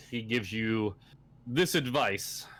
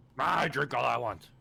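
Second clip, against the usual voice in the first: put-on surly, rough, tipsy drunken dwarf voice; 3 semitones higher than usual. Told to cut back on drinks, the dwarf character retorts in a yelling dwarf character voice. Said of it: "not yelling at at people who's standing".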